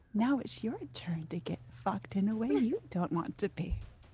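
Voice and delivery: hushed whisper. Speaking in character to instill fear in a gentleman: whispering. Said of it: "I want to whisper to him".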